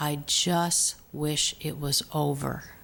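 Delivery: very soft, gentle, soft-spoken voice with no force. Speaker retelling what a man said to him, in a real soft voice. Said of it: "in a real soft voice he said".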